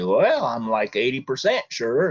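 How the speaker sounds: put-on Vermont farmer voice. Answering Zebulon in a made-up story, speaking as a Vermont farmer. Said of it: "I'm the Vermont farmer".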